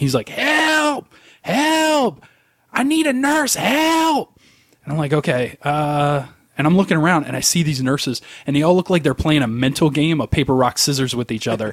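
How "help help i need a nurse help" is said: acted, very high, very slow drawn-out yell. Speaker retelling an old man in the next room yelling for a nurse, imitating an old man yelling. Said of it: "starts yelling".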